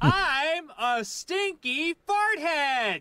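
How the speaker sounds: high-pitched scream mixed with laughter.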